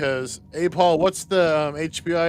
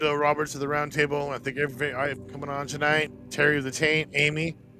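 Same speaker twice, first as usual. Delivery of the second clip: ordinary talk, nothing marked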